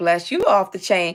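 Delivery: warm, motherly, mom-like tone. Thanking everyone and blessing them, speaking in a motherly voice. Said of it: "in my motherly voice".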